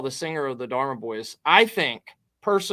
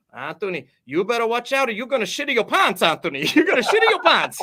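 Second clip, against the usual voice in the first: terrible put-on Italian accent, pitched up; 7 semitones higher, 3 dB louder than usual. Retelling what a mother told her son Anthony, terrible Italian immigrant accent. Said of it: "in my best Italian immigrant accent".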